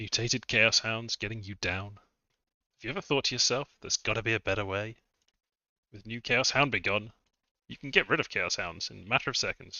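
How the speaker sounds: infomercial announcer pitch delivery. Playing a game and riffing on chaos hounds, doing an infomercial announcer voice. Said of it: "Sounds like an infomercial".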